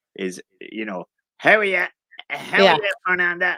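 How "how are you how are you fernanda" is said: put-on inner-city Dublin accent, higher and louder. Showing how people talk in the Liberties: Liberties Dublin accent. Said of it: "the accent of, of, of the center of the Liber-, Liberties".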